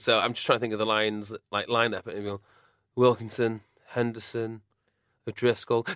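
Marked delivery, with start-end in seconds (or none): 2.9-5.9 mock listless, uninterested, flat commentator drone. Listing the Lions lineup as a commentator would, imitating a bored commentator. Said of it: "the commentator would sound really bored".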